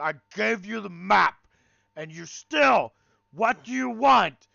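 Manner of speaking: very loud, high, rough, raging monster yell. Game master voicing a bugbear confronting the players, yelling bugbear. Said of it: "the Bugbear is yelling".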